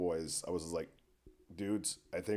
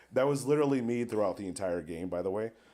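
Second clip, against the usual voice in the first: normal talking voice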